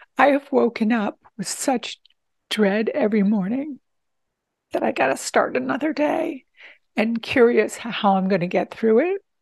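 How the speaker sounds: voice full of feeling. Speaking about feeling supported for the first time in three years, getting emotional. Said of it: "I'm getting emotional".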